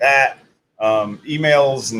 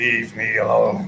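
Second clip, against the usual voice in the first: put-on satanic voice; 3 semitones lower than usual. Joking about being told to go fishing, in a put-on satanic voice. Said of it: "In a Satan-stick voice".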